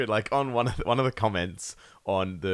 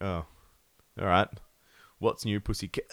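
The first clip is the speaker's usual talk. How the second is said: ordinary delivery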